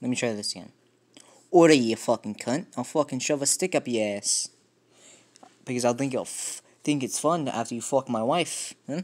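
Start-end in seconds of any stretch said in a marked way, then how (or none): 1.5-8.7 attempted Scottish-Irish accent. Trying accents one after another, a second go in a Scottish-Irish accent attempt. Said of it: "a Scottish less Irish".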